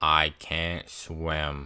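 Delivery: completely deadpan, low, flat, level monotone, acted out. Retelling what Ben said while the speaker was fighting for his life, Ben's monotone voice. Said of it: "in the most monotone voice".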